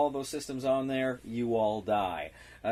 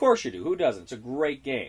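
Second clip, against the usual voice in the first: usual speaking voice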